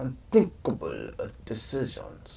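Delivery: hushed, breathy, whispered put-on Slavic accent. Trying the line again and asking others to rate it, in an attempted Slavic accent. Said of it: "Rate my Slavic accent".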